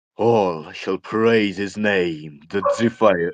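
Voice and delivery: dramatic, deepened voice, very slow, proclaiming. Trying out a line to please Crooks, in a deepened voice. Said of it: "do you want me to deepen my voice more?".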